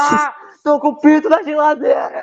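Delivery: shrill, high-pitched yell. Speaker shows what he does when the guy says something: shouting in Scooby-Doo voice. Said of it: "eu começo a gritar com a voz do Scooby".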